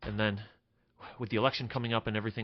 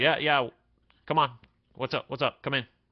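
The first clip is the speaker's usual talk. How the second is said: clipped, curt tone; 4 semitones higher, 5 dB louder than usual. The narrator voices Horace answering the party's approach, curt Horace voice. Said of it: "he was a little bit short with you".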